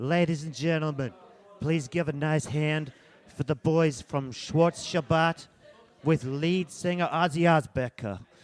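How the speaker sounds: put-on New York accent. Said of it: "What accent were you going for then?".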